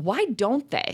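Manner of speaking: high, slow, exasperated tone.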